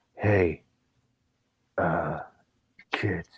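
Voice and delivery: creepy, low, soft and hushed. Showing how to talk creepy like Steven Seagal. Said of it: "you gotta talk creepy like Steven Seagal".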